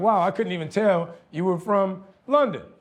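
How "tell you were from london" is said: normal talking voice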